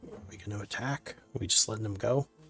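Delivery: hushed whisper in a put-on character voice. Voicing a companion urging the party to act: whispering in character. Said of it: "He whispers".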